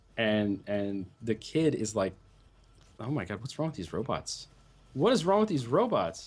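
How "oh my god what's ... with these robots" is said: put-on fast, swooping Irish accent laid on ridiculously thick. Quoting a kid, imitating thick Irish accent. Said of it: "the Irish accent on this kid is so ridiculously thick".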